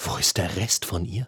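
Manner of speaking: soft, close, hushed voice. Konrad questions his son nose to nose, pinning him against the wall: half-whispered. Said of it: "flüsterte Konrad jetzt Nase an Nase".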